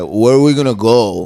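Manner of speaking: put-on Italian-like accent. Show how a comedian talks, in a Mark DeBonis Italian-sounding voice. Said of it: "his voice is like".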